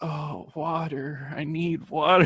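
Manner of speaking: overdramatic, desperate voice, like dying. Retelling how a kid begged for water after one night, mock dying of thirst. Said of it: "Like dying".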